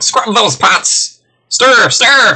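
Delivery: very high, loud, shouting goblin voice. A game master describes a goblin heard near a kitchen, loud shouting goblin voice. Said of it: "There's a loud goblin voice, kind of like shouting".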